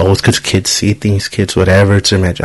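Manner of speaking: ordinary talk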